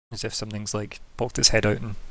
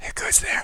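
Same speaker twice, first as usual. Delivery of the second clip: soft, hushed whisper. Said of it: "But in a whisper".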